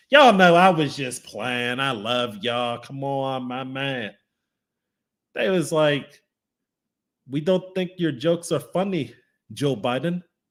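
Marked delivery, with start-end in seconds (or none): 7.3-10.2 bad, fake Saudi Arabian accent. Acting out Saudi Arabia's response in a retold story, terrible Saudi Arabian accent. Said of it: "that's my terrible Saudi Arabia accent".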